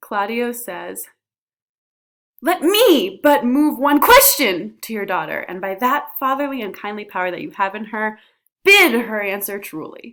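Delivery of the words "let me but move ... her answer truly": emphasis landing on odd, surprising words. Reading Claudio's line to show emphasis choices: emphasis on unexpected words. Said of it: "I like put the emphasis in some surprising places".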